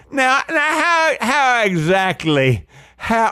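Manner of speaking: very high, drawn-out Southern drawl. Questioning the other speaker again as a mock attorney: playing a southern attorney. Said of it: "you gotta say now a lot".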